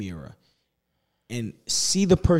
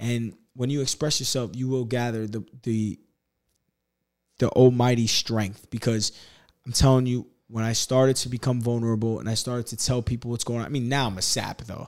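ordinary talk

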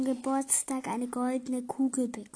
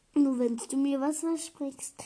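ordinary delivery

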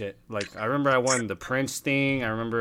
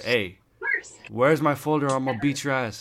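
play-acted bully voice, blunt, tough and threatening; 2 semitones higher than usual. Retelling a classmate's threat in class: imitating someone saying it loud. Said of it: "he said that shit loud".

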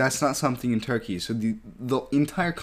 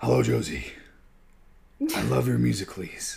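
put-on gravelly hero voice. Acting out a creepy stranger approaching a kid: Batman voice. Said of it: "I'm doing Batman".

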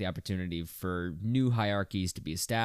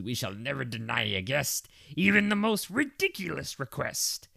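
unpracticed, high, swooping cartoon crab voice; 6 semitones higher than usual. Comparing an episode to a SpongeBob hotel episode, Mr. Krabs impression. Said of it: "my Mr. Krabs sounds like Yoda".

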